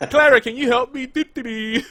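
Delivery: put-on derpy voice. Joking about how the Doctor will walk around: derpy Doctor voice. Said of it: "the doctor being kinda, like, derpy".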